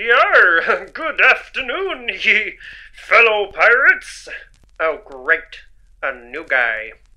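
put-on hammy stock pirate accent, drawn-out yar. New arrival greeting fellow pirates, in a pirate voice. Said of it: "you don't have to do the voice down here".

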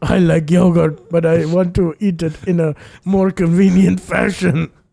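loud put-on primitive caveman-style voice. Joking about who invented Go-Gurt, acting as a caveman: put-on caveman voice. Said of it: "It's like a caveman".

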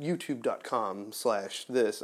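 soft, slow, overly proper host voice.

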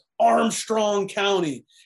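acted-out high, loud screaming. Retelling a man's reply about the county: imitating a man screaming. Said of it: "He screamed at me".

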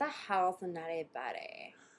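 put-on Valley girl accent. Playing a valley girl in a car during a reenactment: valley girl voice. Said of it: "there's a Valley girl in her backseat".

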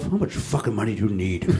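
mumbled under the breath. Recalling a commercial seen on tv, retelling what was muttered to oneself. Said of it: "I literally muttered to myself".

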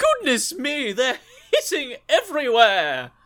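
very high, swooping posh lady exclamation. Retelling what a woman was heard saying, in a posh lady voice. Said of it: "a sort of posh lady scream".

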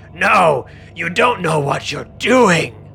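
booming, resounding voice. Voicing the fanged helmet as it speaks, in a very booming voice. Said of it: "it speaks in a very booming voice".

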